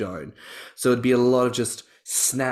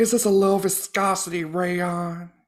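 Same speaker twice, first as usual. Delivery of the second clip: campy put-on voice, pitched higher; 9 semitones higher than usual. Acting out the Elle Woods role as Jennifer Coolidge: Jennifer Coolidge voice. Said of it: "but as Jennifer Coolidge".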